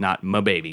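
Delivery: put-on plain stress on not, my baby said lightly. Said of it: "but my baby".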